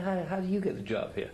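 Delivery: cheeky, self-satisfied. Retelling a man smirking as he asks the rabbi about a job, imitating a smirking taunt. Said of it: "with a big smirk on his face and says".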